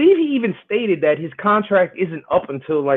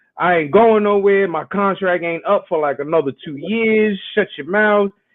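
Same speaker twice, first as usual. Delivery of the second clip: ordinary delivery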